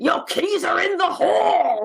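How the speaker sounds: high automated announcement voice. Imagining a virtual assistant announcing things: Brian Blessed as Siri. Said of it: "he should just do the voice of Siri".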